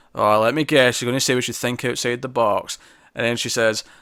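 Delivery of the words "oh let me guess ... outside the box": usual speaking voice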